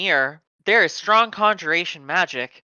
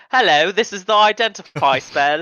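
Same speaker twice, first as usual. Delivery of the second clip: silly, goofy put-on voice, louder; 4 dB louder than usual. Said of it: "I was gonna do something stupid like".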